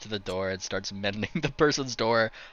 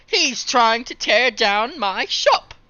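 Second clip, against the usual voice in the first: put-on shopkeeper voice, higher and louder; 9 dB louder than usual. Voicing Red Herring, who accuses someone of tearing down his shop: Red Herring voice. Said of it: "it's Red Herring that kind of talks first".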